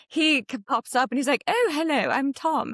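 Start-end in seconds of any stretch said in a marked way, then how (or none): 1.4-2.6 put-on unhurried English accent. Retelling meeting someone at a pool, imitating Tom's British accent. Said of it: "you're British".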